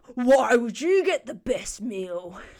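big, booming, loud half-orc voice. Narrating a tabletop scene, the half-orc Chanlarg taunts the players: booming Chanlarg voice. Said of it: "laughs in a booming voice".

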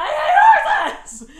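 sobbing, very high-pitched and very loud. Speaker retells being kicked off a horse at camp: retelling own sobbing. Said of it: "I'm sobbing".

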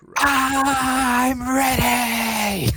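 very high whisper-shout, drawn-out I'm. Answering the rallying call to the podcast crew, whisper-shout. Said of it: "whisper that but also shout it".

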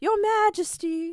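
very high, loud, fawning sweet-talking voice. Retelling how Alice flatters the angry queen: imitating Alice sucking up. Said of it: "seeing Alice kiss ass".

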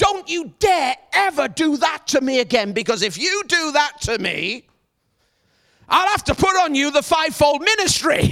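firm, commanding voice full of authority. Retelling confronting a man who threw his bike, retelling in an authoritative voice. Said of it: "there was authority in my voice".

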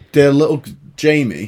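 usual speaking voice

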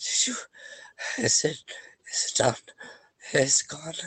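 frightened, scared, teary, tearful voice. Narrator voices a woman looking up at the one tending her wound, scared, tearful voice. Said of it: "She looks up with scared, tear-filled eyes".

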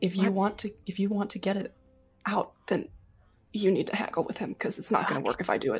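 quiet whisper in character. Urging a companion to haggle with the salesman: whispering in character. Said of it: "I said I was whispering".

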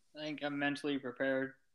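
very quiet, flat, listless, unthrilled voice. A co-host answering if he's ready to get back on the grind, unenthusiastic. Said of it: "way to sound thrilled".

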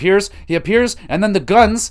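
high, loud, shocked, excited outburst.

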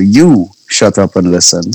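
ordinary talk

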